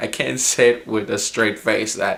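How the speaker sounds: plain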